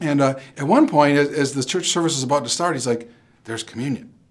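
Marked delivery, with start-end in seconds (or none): 3.4-4.0 hushed whisper under the breath. Retelling what a companion said in church before the service: imitating someone whispering. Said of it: "He whispers it to me".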